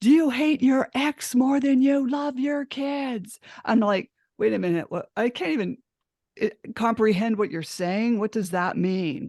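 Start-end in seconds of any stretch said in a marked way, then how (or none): 0.0-3.4 put-on, high screaming. Retelling how a woman burst into her home and screamed at her, imitating a woman screaming. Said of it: "but she was screaming".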